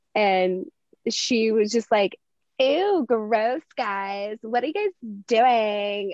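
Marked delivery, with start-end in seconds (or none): 2.6-6.1 put-on sassy little-girl voice. A parent retells what their seven-year-old daughter said during catch, imitating her sassy voice. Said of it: "she's been turning on this sassy voice".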